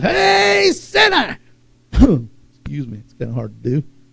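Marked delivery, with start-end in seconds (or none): 0.0-1.4 loud, high-pitched street preacher style yelling. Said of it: "And the guy yells".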